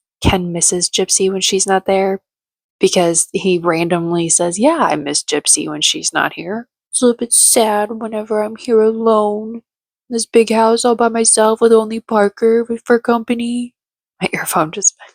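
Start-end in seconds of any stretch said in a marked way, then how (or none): 4.6-13.7 put-on sneering, sarcastic, mocking voice. Quoting a man's remark to production about missing someone, mimicking a mocking voice. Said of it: "He put on this mocking voice".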